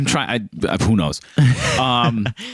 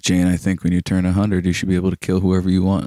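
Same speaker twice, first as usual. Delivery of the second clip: deadpan, flat, dry, no peaks or valleys; 3 semitones lower than usual. Retelling what the brother-in-law said at dinner: imitating a flat monotone. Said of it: "he doesn't have peaks and valleys in his voice".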